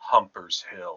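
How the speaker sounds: hushed stage whisper, a bit too loud. Narrating a character who looks around and leans in to the listener, loud stage whisper. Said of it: "he leans into you and he he whispers, perhaps a little too loudly".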